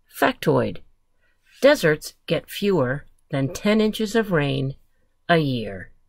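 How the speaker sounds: ordinary delivery, nothing marked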